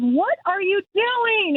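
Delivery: very high, drawn-out, acted yell. Retelling a guy driving by who yelled at them on a bridge, retelling a yell. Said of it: "And he's yelling at me on the bridge".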